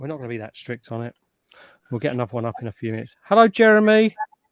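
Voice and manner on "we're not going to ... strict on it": much softer, quiet delivery. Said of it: "We, we're not gonna be that strict on it".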